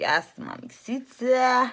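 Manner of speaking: high, loud, drawn-out, over-the-top gushing delivery.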